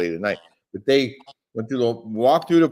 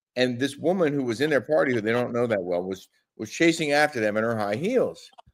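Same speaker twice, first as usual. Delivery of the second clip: plain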